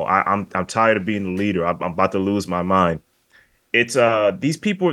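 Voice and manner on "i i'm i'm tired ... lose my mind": ordinary talk, nothing marked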